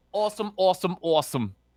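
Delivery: awesome said with a New Jersey accent. Saying a word again and again to show it off: new jersey accent. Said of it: "That's Jersey right there".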